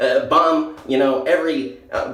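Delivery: nasal, ultra-sarcastic mock pundit voice.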